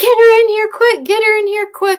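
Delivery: frantic, urgent yell, very high and loud. Retelling hearing a woman on the ship, acting out her urgent yelling. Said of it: "I hear a woman yelling".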